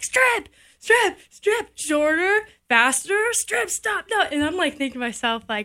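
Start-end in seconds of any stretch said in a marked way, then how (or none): 0.0-4.2 mock, high, drawn-out shouted string. Retelling a fishing guide's instructions at the dock: imitating someone yelling. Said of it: "he's yelling at me".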